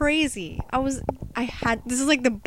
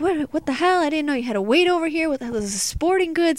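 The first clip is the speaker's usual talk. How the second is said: play-acted frantic, crazed, screaming, complaining tone; 4 semitones higher than usual. Retelling how people who couldn't find where to wait started screaming at 5 a.m.: acted-out screaming. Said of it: "crazy, screaming".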